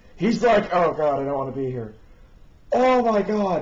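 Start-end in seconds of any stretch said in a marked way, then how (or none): 0.7-2.0 fast, play-acted, squirming, uneasy discomfort. Retelling how uncomfortable a guy looked, mock-uncomfortable. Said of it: "Look at how uncomfortable he was".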